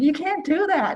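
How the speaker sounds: very high-pitched yelling. Retelling telling a friend off for licking soil: imitating own yelling. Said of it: "And I was yelling at him like".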